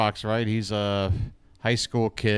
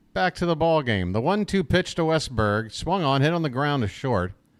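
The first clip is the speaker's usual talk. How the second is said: ordinary talk, nothing marked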